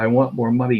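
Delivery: ordinary delivery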